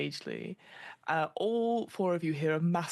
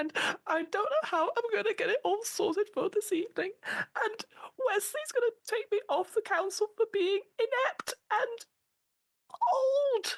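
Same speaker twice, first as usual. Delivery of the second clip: very high, sobbing, crying out each phrase. Narrator voices Harriet as she starts to cry in front of all four listeners: Harriet crying. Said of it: "starting to cry these big tears".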